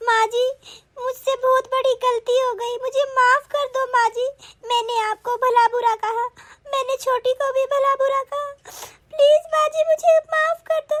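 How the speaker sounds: high, tearful, pleading weeping voice. A daughter-in-law answers her mother-in-law, who asks why she is crying: crying. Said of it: "बहू तू क्यों रो रही है".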